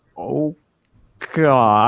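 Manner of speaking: put-on frightened gasp and exclamation. Recounting being threatened by a man, retelling a scared gasp. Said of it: "I was like speechless and scared".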